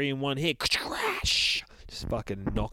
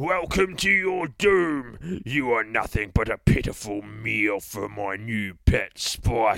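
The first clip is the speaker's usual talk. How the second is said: loud, slow Cockney boogeyman villain voice; 5 dB louder than usual. Narrating a story, the boogeyman addresses Mr. Button: Mighty Boosh Cockney boogeyman voice. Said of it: "says the fucking boogeyman. ... maybe we'll read him as the Cockney from The Mighty Boosh".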